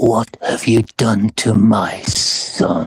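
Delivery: low whisper, very close to the ear. Narrating a scene where a voice from a cloud speaks to Simon, whispering. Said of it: "this voice whispers into Simon's ear".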